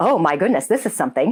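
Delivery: ordinary delivery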